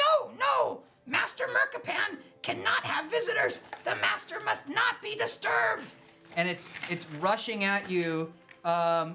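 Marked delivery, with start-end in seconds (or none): 0.0-5.9 tense, strained, very high, swooping creature voice. Telling a story, voicing a being that refuses visitors, strained, high-pitched voice. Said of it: "in a strained, high-pitched voice".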